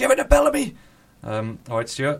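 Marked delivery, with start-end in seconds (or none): 0.0-0.8 mock shouting, much higher, louder. Recalling a man shouting at the tv during a match, imitating his shout. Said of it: "And he was shouting".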